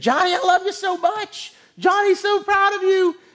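acted out, very high, shrill, gushing proud screams. Retelling how a family erupts after an announcer calls a name: retelling a family screaming. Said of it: "they just start screaming".

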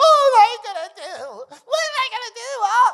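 high, loud, swooping, fretting wail. Retelling a scene from The Incredibles: imitating Elastigirl. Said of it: "Elastigirl is standing there".

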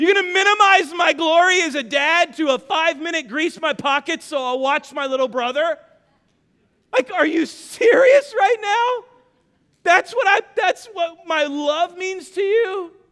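re-enacted scream. A dad retells screaming at his son during an argument. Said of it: "And I'm screaming at him".

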